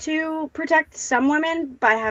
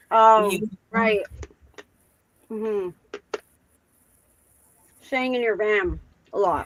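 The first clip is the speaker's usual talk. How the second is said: talking while eating, mouth full. On the show, answering the other speaker while talking while eating. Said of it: "don't eat when you're on the show".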